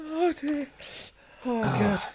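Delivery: helpless tears, crying in a very high voice. Trying to compose himself during the conversation: genuinely crying. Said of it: "I'm genuinely crying".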